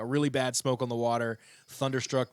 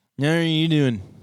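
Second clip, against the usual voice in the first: put-on loud, high slurred drunk voice; 5 semitones higher, 12 dB louder than usual. A podcast host shows how they make fun of such people, in a slurred drunk voice. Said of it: "the drunk voice that we have on this podcast".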